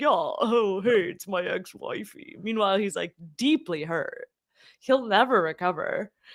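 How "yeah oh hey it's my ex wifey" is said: slow, dopey bro voice. Imitating him making a joke about his ex: imitating a dumb bro. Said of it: "stereotypical, like, kinda dumb bro".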